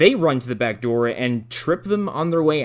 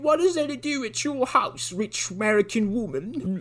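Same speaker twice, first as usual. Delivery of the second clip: terrible fake British accent, high and soft; 8 semitones higher, 5 dB quieter than usual. Retelling a dubbed kid's lines to an american woman, in a bad british accent. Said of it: "they have the worst British accents I've ever heard".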